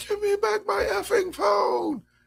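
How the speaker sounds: mock shrieking, very high, ragged and drawn out. Retelling what a person in a clip yelled: imitating someone yelling. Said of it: "Why are you yelling like that?".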